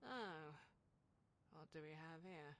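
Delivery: loud, haughty, snobbish, snooty tone. A game character addresses the player, in a snooty, haughty voice. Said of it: "I can hear the upturned nose".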